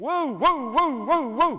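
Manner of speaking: very loud, high, drawn-out dog-like babbling. Retelling her colleague picking up the phone, imitating his golden-retriever-like babble. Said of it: "he sounds like a golden retriever".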